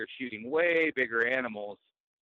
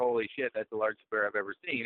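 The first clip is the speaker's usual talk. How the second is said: plain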